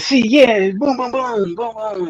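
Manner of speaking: tiny, very high-pitched little voice. Telling how he talked while you were in his chat room, imitating his little high-pitched voice. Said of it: "and his little high pitched voice".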